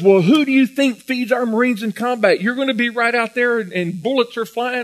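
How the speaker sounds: loud, high-pitched hollering yell. Retelling a superior questioning a recruit who chose to be a cook, retelling a yell. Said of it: "yelling at him".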